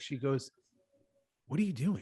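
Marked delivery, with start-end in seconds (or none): 1.5-2.0 hoarse voice, quieter. Retelling what Megan said, imitating a voiceless sick voice. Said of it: "Megan has no voice 'cause Megan's been sick".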